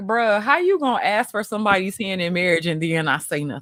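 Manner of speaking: normal talking voice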